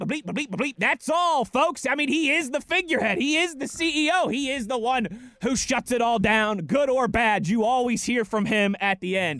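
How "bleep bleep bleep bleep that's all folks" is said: put-on stuttering cartoon pig voice. Comparing a head coach to a cartoon sign-off: Porky Pig voice. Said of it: "doesn't that sound like Porky Pig?".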